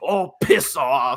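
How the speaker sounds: put-on angry Australian accent throughout. Recounting a fight scene where the kid-gang leader slaps him: retelling an angry line. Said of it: "Like he's like all angry about it".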